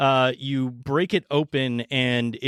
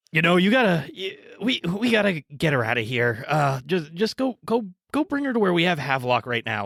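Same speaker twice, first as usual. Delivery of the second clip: gruff, rough, grunting character voice; 4 semitones higher than usual. Voicing a person who grunts and gives an order: gruff grunting character voice. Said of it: "turns around and grunts and is like".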